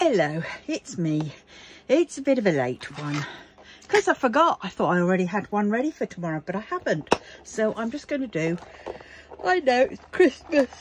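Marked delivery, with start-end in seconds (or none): 7.4-10.7 pitched-up words spoken through a yawn. Recording a late message at Christmas, yawning while speaking. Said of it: "And I'm yawning".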